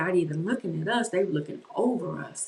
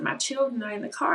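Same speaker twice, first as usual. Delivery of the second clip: mock, high-pitched, pleading, begging tone; 6 semitones higher than usual. Retelling a plea to armed men: retelling own begging. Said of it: "I just started begging".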